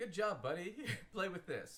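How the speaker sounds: mock high, patronizing kid-talk. Mocking a message as if talking to a four-year-old: talking like to a four-year-old. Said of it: "like you talk to a, a four-year-old".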